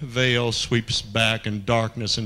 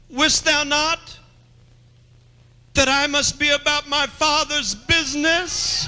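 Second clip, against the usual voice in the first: put-on very high, squeaky, small young boy's voice; 4 dB louder than usual. Acting out a lad's words that she hears: small, immature, squeaking voice. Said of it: "kind of squeaking kind of voice that said".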